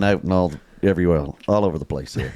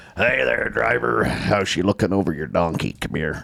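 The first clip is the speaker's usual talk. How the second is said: slow, rough trucker CB radio drawl. Showing how some truckers talk on the cb mic: imitating a trucker's cb radio voice. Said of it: "I was basically doing it there".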